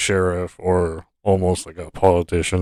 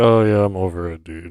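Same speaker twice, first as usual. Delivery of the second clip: put-on mocking, dismissive tone. Retelling how a man mockingly brushed off the situation, imitating a mocking remark. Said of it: "he was kind of like mockingly".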